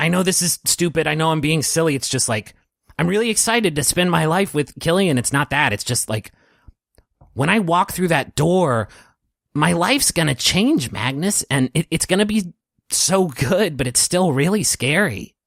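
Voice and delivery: high, frantic, nervous rambling. Carrie, pacing nervously in a vestibule, speaks to Magnus: frantic. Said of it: "and she's just pacing nervously in this vestibule, and she starts to speak kind of frantically. / and she's wearing this um, silver dress with an ornately patterned dark blue vest over it, and she's w".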